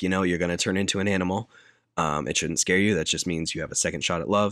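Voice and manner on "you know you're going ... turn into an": usual speaking voice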